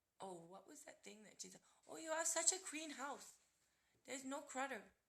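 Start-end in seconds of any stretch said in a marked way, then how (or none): 1.9-4.8 clumsy put-on Chinese accent, loud and high. Quoting what a woman once said, in an attempted Chinese accent. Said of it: "now I'm going to try a Chinese accent".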